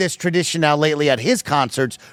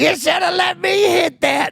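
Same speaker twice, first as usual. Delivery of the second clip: put-on very high, rough, raspy drunk voice; 14 semitones higher than usual. Retelling what a wasted girl said to him, imitating a raspy drunk woman. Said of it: "She's got that raspy voice".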